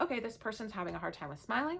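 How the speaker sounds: plain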